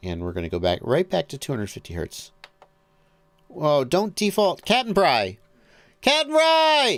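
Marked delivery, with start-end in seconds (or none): 4.6-7.0 very high, swooping, drawn-out yell. Calling out to two people who are present: yelling at someone. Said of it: "I'm yelling at you 'cause you're here".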